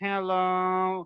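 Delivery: drawn out on fully emptied lungs, no air left. Showing how speech sounds after pushing out all the air, speaking with no air left. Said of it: "now I'm gonna push out all the air out".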